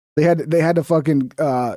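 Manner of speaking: plain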